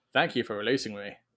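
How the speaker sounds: flat imitated dragon voice. Imitating a rescued dragon's voice line from a game: imitating a deadpan dragon. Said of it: "it's so deadpan".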